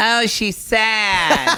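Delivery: high, slow, mocking Memphis drawl, stretched out.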